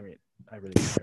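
barely audible mumble. In a group discussion, too quiet for the others to hear: mumbling quietly. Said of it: "Speak up, [name]. Nobody can hear you".

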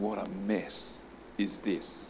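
put-on hushed, soft, drawn-out South African accent. Retelling a man's thoughts as he comes out of the lift, in a good South African accent. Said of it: "good South African accent".

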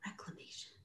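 seductive, sexy, breathy whisper. Asked to say the word in a sexy way: sexy voice. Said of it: "You just have to say it in a sexy way".

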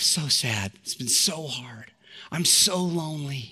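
put-on weeping voice. Retelling a phone call where the caller started weeping: imitating Kathy weeping. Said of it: "And then she just started weeping".

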